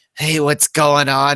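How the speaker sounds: horrible put-on American accent. Mocking a British actor playing a detective in an American show; horrible American accent. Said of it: "that is a horrible American accent".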